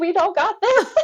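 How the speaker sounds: very high-pitched, tearful, panicked crying. Retelling a scene with a doctor, quoting what they said back then; retelling their own panic. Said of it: "I'm panicking at this point".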